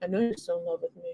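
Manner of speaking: soft, smooth, suave ladies'-man delivery. Recounting a scene, the speaker retells what Dennis said, mock-suave Dennis imitation. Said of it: "he says it in like this suave way".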